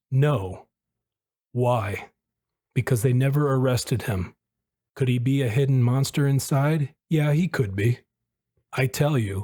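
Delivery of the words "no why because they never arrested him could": ordinary delivery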